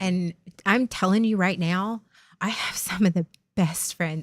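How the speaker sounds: emotional, welling up, close to tears. Going live, reminding themself it's okay, close to tears. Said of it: "Now I'm going to cry".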